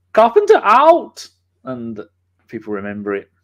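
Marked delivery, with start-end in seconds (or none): 0.1-1.2 German accent, very high-pitched and very loud. Recalling how a sign-off on the show was once said, in a german accent. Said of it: "I once said it in a German accent".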